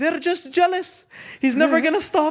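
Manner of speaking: acted-out yelling. Retelling how a father yelled at the police: imitating someone yelling. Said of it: "He's yelling at the cop".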